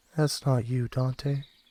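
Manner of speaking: distant, fainter, quiet background voice. Game master voicing a second voice behind Timothy, speaking to Dante; faint voice. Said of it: "you hear like a fainter one".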